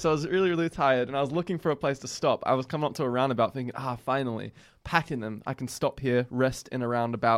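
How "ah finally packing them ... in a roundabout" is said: ordinary talk, nothing marked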